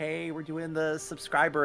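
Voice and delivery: very slow, high, sweet, sugary-nice tone. Imitating another speaker's earlier announcement: imitating a high-pitched nice voice. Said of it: "the high pitch, like, nice".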